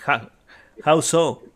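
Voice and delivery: put-on halting broken English with a thick Spanish accent. Voicing a man asked for help by a group: broken English, heavy Spanish accent. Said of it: "in kind of a broken English with a, a heavy Spanish accent".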